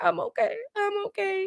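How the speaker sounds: put-on very high, breathless, gasping sob. Retelling a reality-show moment where a cast member breaks down: imitating someone crying and hyperventilating. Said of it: "start crying, hyperventilating".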